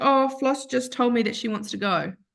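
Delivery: put-on words spoken through tears, crying voice. Retelling what the crying vet said: imitating a vet crying. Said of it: "when the vet cried and said".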